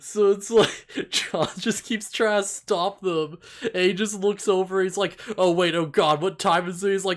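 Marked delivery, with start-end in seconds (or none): 5.4-6.9 put-on panicked voice, higher pitched and louder. Retelling a show scene where John panics: imitating John freaking out. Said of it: "he just starts freaking out".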